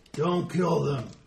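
loud monstrous ogre voice. Describing to listeners what an ogre says in Ogre: ogre voice. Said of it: "And it says".

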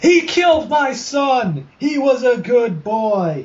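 very high-pitched screeching. A woman who just hurled a rock at the group, screeching. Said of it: "She just screeches".

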